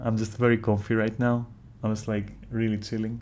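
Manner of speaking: ordinary delivery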